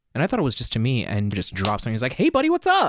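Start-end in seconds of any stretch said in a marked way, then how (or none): 2.2-2.9 very high, loud, endlessly optimistic upbeat voice. Retelling how a coworker checked in on them: imitating infinite optimism. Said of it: "this infinite optimism".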